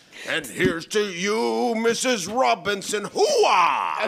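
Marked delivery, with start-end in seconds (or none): 3.1-4.1 "hoo-ah" exclamation stretched out long. Shouting catchphrases while asked about the family: Al Pacino voice. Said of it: "Why do you keep doing Al Pacino lines?".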